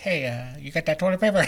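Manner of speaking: very low, deep cartoon-style dad voice. Retelling asking around a store for toilet paper: Peter Griffin voice. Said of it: "sounding like Peter Griffin".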